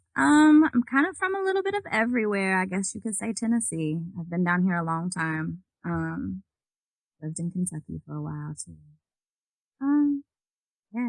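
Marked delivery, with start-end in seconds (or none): 0.7-8.8 very soft, quiet, almost whispered delivery. Telling the others where they are from, talking very quietly. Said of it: "Are you whispering?".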